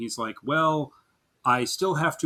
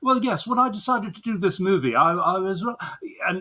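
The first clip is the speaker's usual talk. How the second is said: put-on posh upper-class British accent, pitched up; 7 semitones higher, 3 dB louder than usual. Describing an actor in behind-the-scenes footage, imitating him: Will Poulter's posh British accent. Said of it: "he's got a very sort of posh high class British accent".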